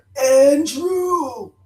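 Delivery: high talking-dog voice. Telling how circling dogs stopped and looked at the speaker's brother: imitating dogs saying a name. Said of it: "just like that".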